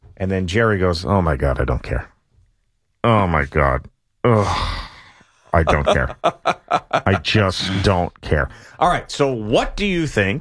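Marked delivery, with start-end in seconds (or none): 1.1-8.5 low, mock mortified, fed-up groaning. Host in the opening segment retelling Jerry's reaction to Al's topic, imitating mortified Jerry. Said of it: "Jerry was completely mortified".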